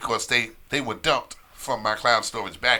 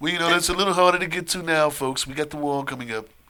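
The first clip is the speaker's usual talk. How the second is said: pitched-up, rally-style crowd-address voice; 6 semitones higher, 3 dB louder than usual. Joking about travel to Mexico: Donald Trump impression. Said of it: "Was that a Trump impression?".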